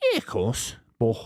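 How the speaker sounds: breathy, out-of-breath voice. Recalling how a footballer opened every interview, doing a Steven Gerrard impression. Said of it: "the first thing Gerrard say would go".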